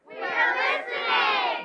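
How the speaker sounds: very high, loud group voices. Answering a storyteller's call again after being asked: much louder. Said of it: "so we can say it much louder".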